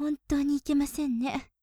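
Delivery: ordinary delivery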